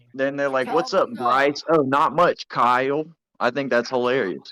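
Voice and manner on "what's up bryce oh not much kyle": slow, put-on, bland casual chatty voice.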